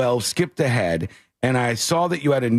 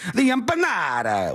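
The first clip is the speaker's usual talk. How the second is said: fake Italian accent, pitched higher; 6 semitones higher than usual. Mocking people who adopt an accent when saying foreign words: put-on Italian accent. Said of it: "That sounds Italian".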